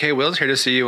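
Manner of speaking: normal talking voice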